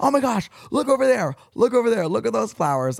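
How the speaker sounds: thrilled, very high, excited shrieking screams. On the Big Sur drive with Claire, the speaker retells excited screaming. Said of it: "we were screaming".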